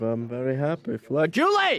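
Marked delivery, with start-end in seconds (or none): 1.3-1.8 loud, high yelling. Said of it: "Sorry for, uh, yelling".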